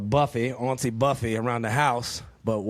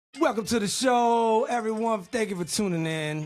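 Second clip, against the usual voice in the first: very high, loud, booming yell; 10 semitones higher than usual. Welcoming everyone to the show and thanking them for tuning in: yelling loudly. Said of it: "I don't know why I'm yelling so loud".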